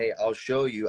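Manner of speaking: ordinary talk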